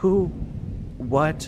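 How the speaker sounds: tiny, meek, very small timid voice. Narrator asks the man who just healed a wound: very small voice. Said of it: "I asked in a very small voice".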